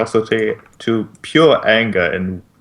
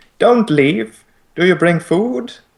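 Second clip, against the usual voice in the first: put-on tiny, very high-pitched childlike voice; 9 semitones higher than usual. Voicing a faint, childlike voice speaking in the players' minds: faint childlike voice. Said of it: "The faint, childlike voice speaks".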